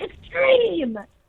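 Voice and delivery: high, taunting yell. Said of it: "he would always yell".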